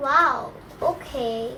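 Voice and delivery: put-on, acted disappointed letdown. Performing the line as a game prompt: acting disappointed. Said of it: "Disappointed eh".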